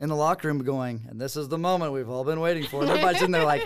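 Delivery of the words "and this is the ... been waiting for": put-on announcer voice, pitched higher. Retelling how the team in the locker room copied Tar: imitating Tar's announcer voice. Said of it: "She just has that announcer voice".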